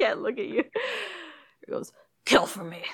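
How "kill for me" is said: sinister, threatening, menacing villain voice. Performing the line after being asked to voice Freddy: Freddy's menacing voice. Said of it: "Say it again".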